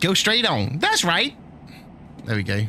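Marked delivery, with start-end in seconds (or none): 0.0-1.4 bad put-on Texan accent, high sat-nav voice. Repeating the game's sat nav directions: imitating texan nanny sat nav. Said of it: "My Texan nanny sat nav. That's terrible".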